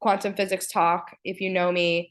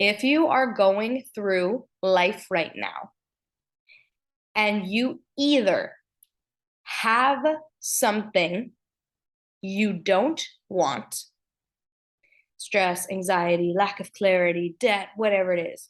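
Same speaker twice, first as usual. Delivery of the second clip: unhurried, slower delivery. Addressing listeners, wanting the point to land, speaking slower. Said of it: "I'm speaking slower because I want this to land".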